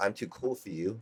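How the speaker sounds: put-on arrogant, unattainable, aloof, too-cool surfer attitude. Imitating serious surfers who act aloof: imitating a too-cool attitude. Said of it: "kind of like this".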